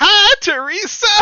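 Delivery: loud, very high put-on woman's voice. Reading a story aloud, doing the voice for a woman: put-on voice for a woman. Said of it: "I'm gonna do the voice for this woman".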